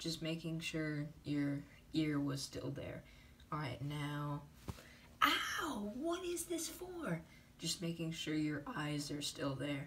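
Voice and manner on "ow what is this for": squeaky, high, slow, drawn-out pig character voice. In a checkup sketch, a patient answers the doctor in a pig character voice. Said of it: "Your species is a pig?".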